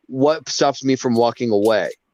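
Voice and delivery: ordinary talk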